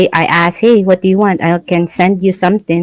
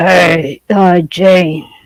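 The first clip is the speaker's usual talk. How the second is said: put-on voice, hesitant. Imitating Kevin greeting Jane, in Kevin voice. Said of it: "you could sound like Kevin".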